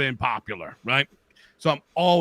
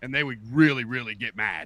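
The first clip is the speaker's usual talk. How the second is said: usual speaking voice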